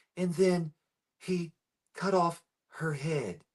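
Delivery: slow, deliberate, word-by-word delivery with dramatic pauses. Imitating a guy's way of talking, the speaker uses dramatic pauses between words. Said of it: "love the way that guy pauses when he talks. He's like".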